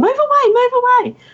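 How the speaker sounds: very high-pitched, fussy shout, pitched way up. Retelling shooing people away while driving home: retelling a yell. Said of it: "and I'm yelling".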